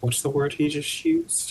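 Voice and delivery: hushed, in-character whispered aside. Speaking as Glint to a companion at a table: whispering in character. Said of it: "Glint whispers to Arobus".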